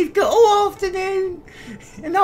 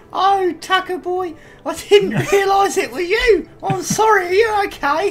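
put-on old-fashioned London cockney accent. Retelling someone apologizing to Tucker after knocking the speaker down, old-fashioned cockney accent. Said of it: "ridiculously strong and super scary. ... Turned into oldie cockney".

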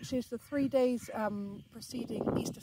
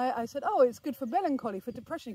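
ordinary talk, nothing marked

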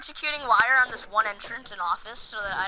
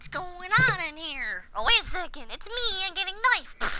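pitched-up, clueless-sounding voice; 8 semitones higher, 4 dB quieter than usual. Retelling how a hiding opponent reacted, imitating an enemy player. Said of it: "He's like".

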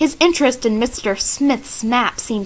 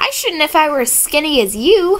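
quick, snapping delivery, pitched up; 5 semitones higher than usual. Bess answers George's teasing, retorting. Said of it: "Bess retorted".

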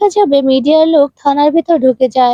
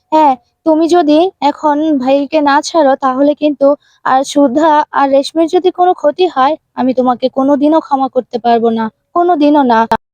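ordinary delivery

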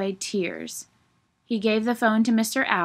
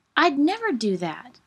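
exclaimed with raised pitch; 5 semitones higher than usual. A narrator reads a character answering an owl's question, exclaiming. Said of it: "exclaimed Franklin".

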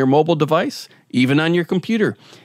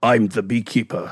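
put-on cool, low-pitched British accent, pitched lower; 5 semitones lower than usual. Talking about an upcoming movie, quoting its star's line as a Jason Statham impression. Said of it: "in his cool British or low accent".

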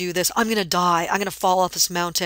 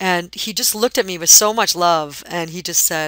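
ordinary talk, nothing marked

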